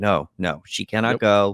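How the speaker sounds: slow, menacing, threatening tone. Retelling how a mother refuses the doctor: imitating a threatening mother. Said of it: "in a threatening manner".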